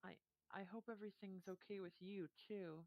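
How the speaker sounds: heavy-hearted, mournful, sorrowful delivery. Voicing a character with a hand on a player's shoulder: said really sadly. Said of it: "really sadly and say".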